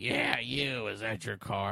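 slow, rough, creaky electrolarynx-style voice-box voice. Retelling being called to by a man with a voice box: imitating a voice box voice. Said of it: "The voice box, dude".

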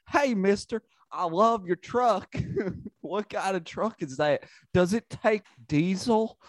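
put-on very high, eager southern child voice. Describing a man whose shtick is being a truck-loving southern child, imitating a southern child. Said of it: "just like a southern child who loves trucks".

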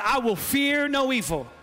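slow, fervent, passionate delivery. Leading the room in repeating a line: said with passion. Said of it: "say it with some passion".

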